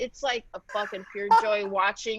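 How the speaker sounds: usual speaking voice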